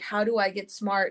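plain

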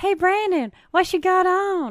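very high, slow, loud put-on little-kid voice. Retelling a funny video clip, imitating a little kid. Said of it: "the little kid, and he's like".

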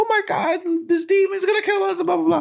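mock very high, sobbing, wailing, panicked whine. Retelling how a character always panics about demons: imitating Zenitsu crying. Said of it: "because he's always crying".

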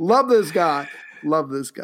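ironic, sarcastic, backhanded admiring tone. Praising a reckless figure after mocking him: sarcastic praise. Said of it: "I'm being sarcastic".

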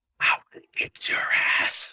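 mock whisper. Telling a story from an awards event, retelling what he whispered: retelling a whisper. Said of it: "So he whispers".

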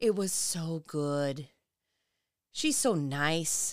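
very sexually suggestive tone. Talking about hanging out with a friend, said in a very sexual way. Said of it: "You said that in a very sexual way".

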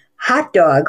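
strong stress on "hot", "dog" much weaker. Explaining compound word stress in a lesson, say it with strong stress on hot. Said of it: "with the big primary stress on the first syllable and the tertiary stress on the second".

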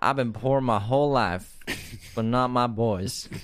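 accent of the American South. Repeating an earlier line for a co-host, this time in a southern accent. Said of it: "I accidentally spoke in a southern accent".

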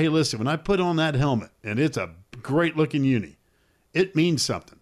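ordinary talk, nothing marked

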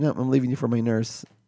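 plain

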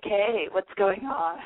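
put-on hoarse, worn-out New York party girl voice. Joking about losing one's voice: hoarse new york party girl voice. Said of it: "or I'm like that crazy New York girl".

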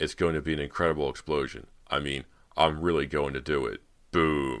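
usual speaking voice

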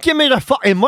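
put-on Scottish accent. Retelling a bank robber's demand at the counter: put-on Scottish accent. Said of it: "I'd say he's Scottish".

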